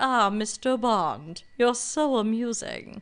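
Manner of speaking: belittling, condescending spy-movie villain tone. Retelling a condescending online reply: imitating a Bond villain. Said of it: "Almost sounds like a Bond villain".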